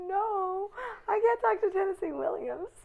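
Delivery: starstruck, panicked wail, high and loud. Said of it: "I go".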